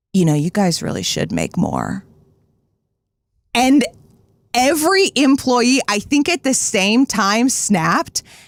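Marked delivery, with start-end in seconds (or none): 0.2-2.1 hushed, very deep, needling tone. Speaker retelling a man's remark to the employees: imitating a man speaking quietly. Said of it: "he was just like real quiet".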